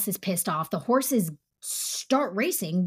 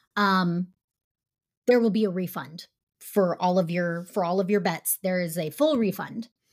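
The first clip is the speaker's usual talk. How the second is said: ordinary delivery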